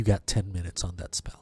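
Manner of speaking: hushed whisper. Voicing a character heading out, speaking to one player: whispering. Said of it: "whispers to you".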